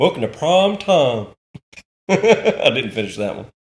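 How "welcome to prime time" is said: pitched-up hillbilly drawl. Joining the other speaker's Freddy Krueger bit, in a Hillbilly Freddy Krueger voice. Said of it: "I call that one Hillbilly Freddy".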